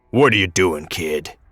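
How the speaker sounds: gravelly, raspy voice. Reading a story, voicing a man who catches a kid: gravelly voice. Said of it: "the man asked in a gravelly voice".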